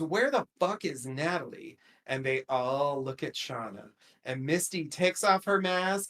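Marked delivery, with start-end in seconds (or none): none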